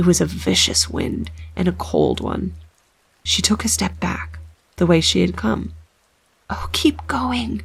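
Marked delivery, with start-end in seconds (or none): 6.5-7.6 hushed, ghostly whisper. A ghost voice whispers in her ear as she pushes into the wind: ghostly whisper. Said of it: "whispered a ghost voice in her ear".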